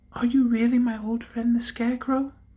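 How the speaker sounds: gentle, sweet, light, high tone. The bird Polychrome speaks for the first time since her transformation, sweet, low voice. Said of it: "asked the bird in a sweet, low voice".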